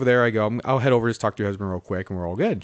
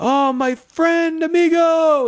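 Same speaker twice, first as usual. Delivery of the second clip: put-on yelling, higher and louder; 6 dB louder than usual. Retelling how a man greeted him across a front yard: imitating someone yelling. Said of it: "he's yelling to me across the front yard".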